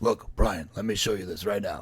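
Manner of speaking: very heavy smoker's voice. Imitating a mother who was a heavy smoker: imitating a heavy smoker's voice. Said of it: "she sounded like this".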